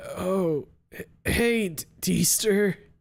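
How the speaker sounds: hoarse, high-pitched croaking voice. The big guy barely registers his visitor and greets Deester, in a hoarse croak. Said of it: "His voice comes out in a hoarse croak".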